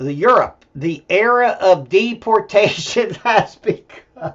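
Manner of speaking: words spoken through laughter. Making a remark and then apologizing for it: laughing while talking. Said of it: "I'm laughing".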